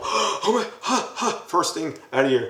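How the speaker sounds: very high, slow, startled, panicked gasping. Describing waking up to silence: imitating someone freaking out. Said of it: "you're gonna start freaking out".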